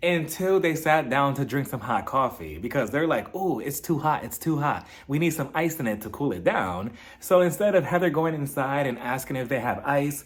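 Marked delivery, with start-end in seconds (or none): none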